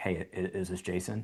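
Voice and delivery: slow, gruff voice. Retelling a phone call from an unknown number, imitating the caller's gruff voice. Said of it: "this like gruff voice on the other side".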